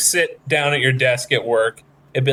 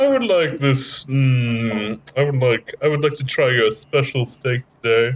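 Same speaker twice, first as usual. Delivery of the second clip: put-on posh rich-person accent with drawn-out "mm". Joking about ordering steak as a rich person, put-on rich-person accent. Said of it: "I don't know why I do that accent".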